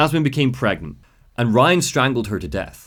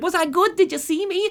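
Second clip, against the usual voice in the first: annoying, nasal little voice, very high. Retelling the chorus girl answering a compliment, imitating Jasmine's nasally voice. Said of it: "she's got a really like annoying little voice, like a nasally voice".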